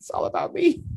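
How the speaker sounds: high, breathy, laughing delivery.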